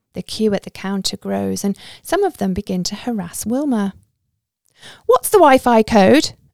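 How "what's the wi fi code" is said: very loud, bossy, self-important, officious tone. A lady waiting in the queue at a cafe counter speaks up, officious voice. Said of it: "a lady asks in an officious voice".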